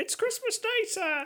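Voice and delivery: put-on very high little Victorian boy voice. Acting a Dickensian scene, a boy answers a gentleman's question, small Victorian boy voice. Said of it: "I was very convincing as a small Victorian boy".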